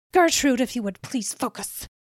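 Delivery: speaking through clenched teeth. Narrator voicing dr. weber addressing gertrude, through gritted teeth. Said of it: "Dr. Weber said through gritted teeth".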